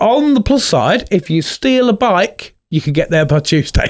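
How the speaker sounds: ordinary talk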